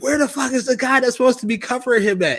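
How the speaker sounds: very high-pitched, shrill, shrieking screaming. Retelling how the wife screamed at the TV during the game: imitating wife screaming at TV. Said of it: "she's screaming at the T V".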